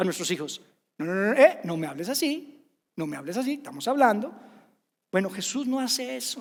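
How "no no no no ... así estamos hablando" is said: usual speaking voice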